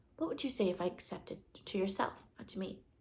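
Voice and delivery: ordinary talk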